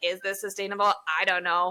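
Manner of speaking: ordinary delivery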